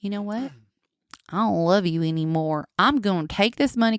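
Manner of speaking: imitated Oklahoma accent. Retelling what she said when leaving the man she married: imitating an Oklahoma accent. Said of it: "this is how they talk in Oklahoma".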